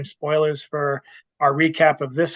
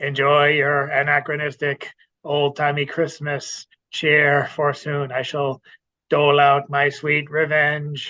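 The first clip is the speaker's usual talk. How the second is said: robotic character voice. Acting out a Christmas scene with friends, the speaker plays the robot in a robot character voice. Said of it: "I'll be the robot".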